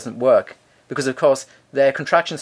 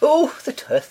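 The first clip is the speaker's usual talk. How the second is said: attempted put-on Welsh accent; 13 semitones higher than usual. Talking about a welsh dentist dad, the speaker tries: welsh accent. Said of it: "Is that your Welsh accent?".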